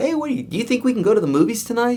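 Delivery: pitch rising on tonight. Explaining that speech uses notes, speaker demonstrates asking a question: rising question intonation. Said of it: "when you ask a question".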